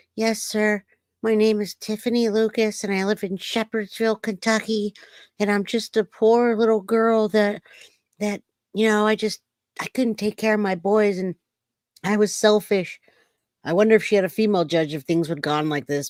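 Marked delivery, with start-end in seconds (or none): 0.2-13.0 small, pitched-up little voice. After hearing Tiffany Lucas answer in court, act out her statement in Tiffany Lucas's little voice. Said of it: "Did you guys hear her little voice?".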